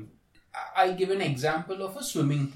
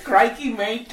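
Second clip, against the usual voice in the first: loud, high-pitched put-on Australian accent; 6 semitones higher, 6 dB louder than usual. Voicing a snake, pissed at being woken by a crocodile, in an Aussie accent. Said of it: "That's our Aussie accent".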